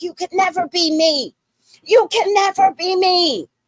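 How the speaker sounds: shrill, very high, loud screamed shouting. Recounting a fight with a woman who followed them out, retelling a scream. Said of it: "I'm screaming back at her".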